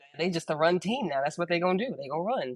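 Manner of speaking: plain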